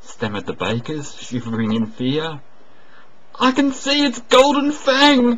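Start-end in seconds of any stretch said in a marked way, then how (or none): 3.4-5.4 piercing, shrill shriek, very high and very loud. Reading a bureaucrat hiding at the rear as the monster appears, screamed. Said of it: "screamed one of the bureaucrats".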